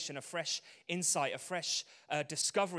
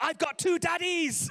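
proud, shrill voice, very high and very loud; 14 semitones higher, 9 dB louder than usual. Retelling what Gracie announced in front of everyone at breakfast, imitating Gracie's proud loud announcement. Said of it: "proudly announces at the top of her voice".

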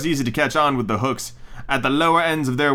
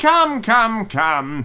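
loud, high, crow-like cry; 8 semitones higher, 3 dB louder than usual. A crow sees someone fall and calls to his friends, crying out loudly. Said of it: "cried loudly".

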